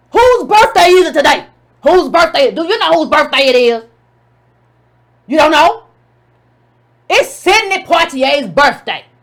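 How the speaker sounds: loud, mock shouting rant. Retelling Roland Martin's reply to a Republican guy: imitating Roland Martin shouting. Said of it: "Roland Martin started shouting".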